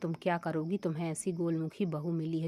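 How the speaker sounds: plain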